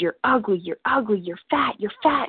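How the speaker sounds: loud, screaming delivery. Retelling inner voices screaming insults during a binge: imitating voices screaming. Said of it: "all these voices were screaming at me".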